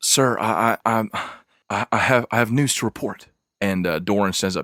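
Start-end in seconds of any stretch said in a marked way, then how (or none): 0.0-3.3 panting, breathless voice, higher and slower. A narrator voices a young woman who comes running in with news, panting, out of breath. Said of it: "She is panting and sweating".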